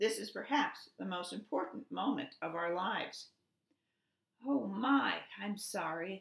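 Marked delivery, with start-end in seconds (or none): 4.5-6.2 apologetic tone, spoken very slowly. Bluebird, just told by Goose that they are very busy, apologetic. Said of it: "apologized Bluebird".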